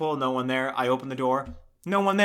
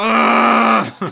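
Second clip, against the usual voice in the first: mock yell through bared teeth, higher, louder; 9 semitones higher, 12 dB louder than usual. Speaker imitates a woman who yells through her open teeth, imitating a yell through open teeth. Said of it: "yells through her open teeth".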